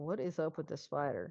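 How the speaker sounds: leaning-in, half-whispered aside. Leaning over to another character during the game: half-whispering. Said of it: "lean over to Quinn and whisper".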